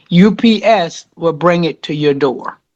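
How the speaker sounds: ordinary talk, nothing marked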